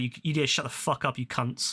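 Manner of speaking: acted, mock-angry scolding tone. Retelling how you swore at people as the show finished, retelling an angry telling-off. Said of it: "I was so pissed".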